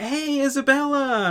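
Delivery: energetic, very high-pitched voice. Retelling greeting a neighbor: retelling a super high-energy greeting. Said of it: "tried to super high energy".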